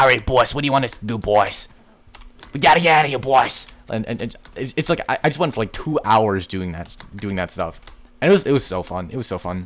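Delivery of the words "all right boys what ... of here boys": loud, silly, put-on New York accent. Recalling going around for hours calling out to the boys, in a stupid fake New York accent. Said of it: "using this like stupid like n- not New York accent".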